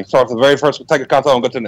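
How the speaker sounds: put-on, full toy-commercial spokesman delivery. Joking about telling a Sega history like the Micro Machine guy. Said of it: "I'm gonna do it like the Micro Machine guy".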